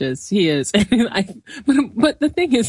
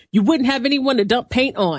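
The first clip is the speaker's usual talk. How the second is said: mock-angry, sharp tone, pitched higher; 4 semitones higher than usual. Retelling Shayna's instant comeback in a scene, imitating Shayna's put-on angry voice.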